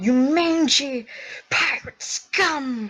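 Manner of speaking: high-pitched yelling creature voice. Voicing something that yells at you in your head, yelling. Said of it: "it sort of like yells at you".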